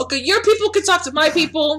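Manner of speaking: put-on high-pitched Brooklyn accent. Playing Stretch, answering someone who says they've got people: Brooklyn accent. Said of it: "she has got a fucking Brooklyn accent".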